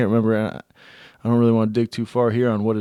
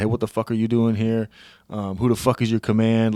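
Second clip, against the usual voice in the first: put-on, aggressive, confrontational tone. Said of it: "cursed at him".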